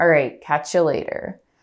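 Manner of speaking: falling final intonation, ending on downward pitch. Demonstrating how people naturally end a spoken point; falling, down inflection. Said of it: "more of a down than like".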